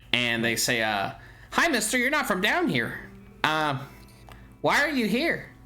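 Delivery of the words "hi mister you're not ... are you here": very high, cute chorus of tiny little voices. A storyteller voices a group speaking all at once, in cute little voices. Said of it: "they have cute little voices that I probably can't do".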